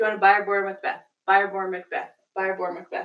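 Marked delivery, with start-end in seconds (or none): none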